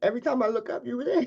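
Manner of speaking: high, tearful voice rising and cracking. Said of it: "okay, now I'm getting emotional".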